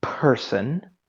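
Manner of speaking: hard stress, popped P in the word person. Addressing someone as buddy, friend, then: emphasis on the p in person. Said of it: "with emphasis on the P".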